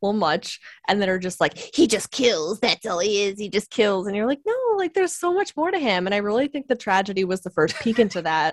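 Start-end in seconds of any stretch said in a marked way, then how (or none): 1.6-4.1 lampooning, derisive caricature of an obsessive superfan voice. Imitating some over-the-top Boba Fett fans; mocking impression of Boba Fett fans. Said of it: "I just love your impression of these fans".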